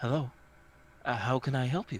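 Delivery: husky, easygoing voice. Narrator voicing a six-eyed figure greeting you at a doorway, soft, husky voice. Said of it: "she says in a soft, husky voice".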